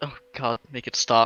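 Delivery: muttered under her breath. Voicing a character muttering a complaint: said under her breath. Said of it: "say under her breath".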